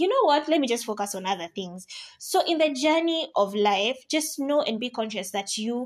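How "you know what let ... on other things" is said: usual speaking voice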